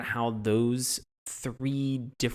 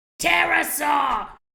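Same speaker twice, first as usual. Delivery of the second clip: put-on screeching shout, much higher; 14 semitones higher, 9 dB louder than usual. Retelling how a man says the word, imitating a screeching shout. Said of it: "can I try it?".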